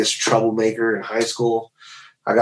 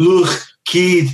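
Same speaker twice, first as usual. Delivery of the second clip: faked Liverpudlian accent; 7 semitones higher than usual. Retelling how his tour manager from Liverpool talks, the speaker does a Liverpool accent impression. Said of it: "That's exactly how he sounds".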